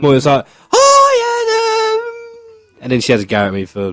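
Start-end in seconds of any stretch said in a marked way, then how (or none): 0.7-2.8 very high pitch, hi drawn out. Host showing how his co-host greets him, doing a bad impression of Emily. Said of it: "doing a bad impression of her".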